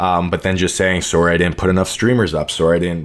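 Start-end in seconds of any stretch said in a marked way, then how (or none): none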